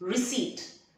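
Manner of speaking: receipt said with stress on second syllable -ceipt. Teaching the word with a silent P: stress second part of receipt. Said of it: "you need to stress on the second part".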